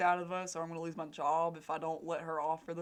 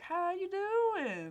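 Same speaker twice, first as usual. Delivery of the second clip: mock goofy, silly, very high voice; 14 semitones higher than usual. Speaker retells greeting a delivery driver who didn't respond, retelling a silly greeting tone. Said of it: "in a silly tone".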